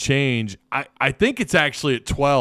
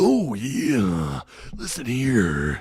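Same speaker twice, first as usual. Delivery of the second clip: drawn-out wrestler voice with big swoops. Answering a request for an impression: Macho Man impression. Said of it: "I need your best Macho Man impersonation".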